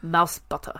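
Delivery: over-the-top low, dramatic German accent, halting start. Asked by the other speaker to try the phrase in a dramatic German accent. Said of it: "please try it in a dramatic German accent".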